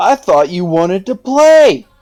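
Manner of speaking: high, shouted, playful taunting yell. Declaring a character's action in the game: in-character yell. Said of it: "I'll yell out".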